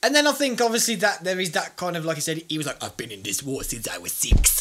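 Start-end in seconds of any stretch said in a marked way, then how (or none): 2.8-4.6 low put-on Mexican accent in English. Quoting what a character said, the speaker does a Mexican accent. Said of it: "my Mexican accent".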